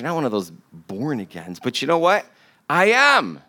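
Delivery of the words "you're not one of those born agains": put-on low, scornful, dismissive, disdainful tone. Quoting a woman's remark to the speaker, mimicking a disdainful remark. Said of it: "with disdain that she said it in her voice".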